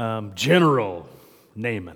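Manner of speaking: low, commanding manly voice. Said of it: "You almost have to say that with a kind of a manly voice".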